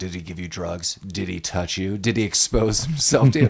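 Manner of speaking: interrogating tone, questions fired one after another. Retelling how Gale questions the kids after a night: imitating Gale interrogating. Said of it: "interrogating the kids".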